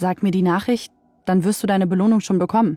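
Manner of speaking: ordinary delivery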